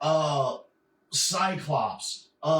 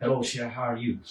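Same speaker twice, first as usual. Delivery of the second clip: put-on low-pitched Cajun accent; 5 semitones lower than usual. Showing how the comic-book character talks, in Gambit's Cajun accent. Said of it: "he talk a little like this".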